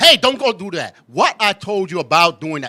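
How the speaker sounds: very loud parent voice. Explaining different kinds of yelling, acting out a mild telling-off, mock slightly raised voice. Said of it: "that's still yelling because your voice is still rise a little".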